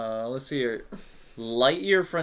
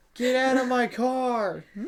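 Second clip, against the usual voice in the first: mock very high screaming child, "car" drawn out; 12 semitones higher, 4 dB louder than usual. Joking about kids playing Grand Theft Auto, imitating screaming kids. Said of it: "a bunch of kids just screaming".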